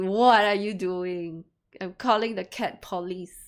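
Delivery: loud, over-dramatic, play-acted shrieking cat voice. Imagining a cat screaming while being bathed: imitating a screaming cat. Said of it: "my cats are screaming at me".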